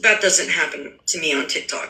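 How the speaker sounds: normal talking voice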